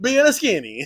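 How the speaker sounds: put-on Italian accent. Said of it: "Today's Italian day".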